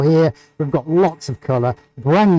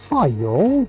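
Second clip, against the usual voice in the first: put-on English accent, higher; 3 semitones higher than usual. Greeting the viewers the way someone once suggested: British accent. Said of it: "that I should say, "Hi, y'all," in a British accent?".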